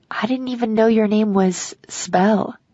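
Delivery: ordinary delivery, nothing marked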